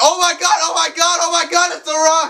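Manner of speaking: mock starstruck fan's high, excited screaming. Retelling jumping out of bed as The Rock appeared: imitating own screaming. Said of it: "started screaming".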